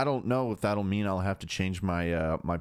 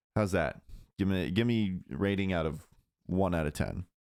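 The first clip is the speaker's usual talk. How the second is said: normal talking voice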